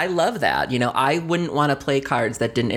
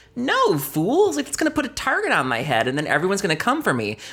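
high-pitched mock scornful tone. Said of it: "And I was like".

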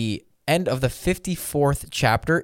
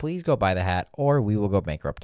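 composed, unruffled, calm, even tone; 4 semitones lower than usual. Asking listeners to go buy the hat, in a calm voice. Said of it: "I'm using my calm voice".

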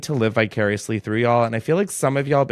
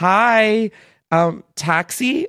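put-on bimbo voice, much higher; 9 semitones higher than usual. Retelling walking up to the taxi line, bimbo voice. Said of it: "In my like fucking most bimbo voice".

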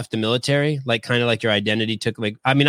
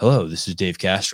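put-on airport announcement voice, lower; 4 semitones lower than usual. Imagining Dave Castro voicing airport announcements: Dave Castro airport announcer voice. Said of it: "What if Dave did the voice for all the airports?".

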